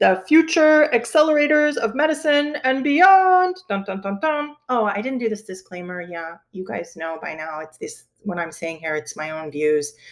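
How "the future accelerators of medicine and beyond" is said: dramatic, pitched-up superhero voice. Speaker introduces a guest's students with a favorite phrase, in a superhero voice. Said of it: "I always like to say this in a superhero voice".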